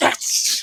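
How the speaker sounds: play-acted, stage-whispered, triumphant victory cheer. Retelling hearing good test results at work: imitating own victory cheer. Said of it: "like I just won the fucking Super Bowl".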